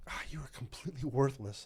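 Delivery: muttering under breath. Retelling a remark to a young airman who erred: muttering under breath. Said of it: "under my voice".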